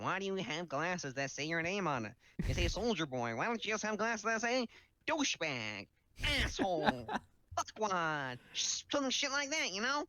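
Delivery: put-on, ranting young kid's voice. Imitating the [name] kid complaining about his glasses: put-on kid voice. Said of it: "I don't know why that voice".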